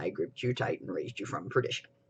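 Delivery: whispered, forced very low put-on deep voice. Showing how low the hoarse voice will drop: season four Cass voice. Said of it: "sound kinda like season four Cass".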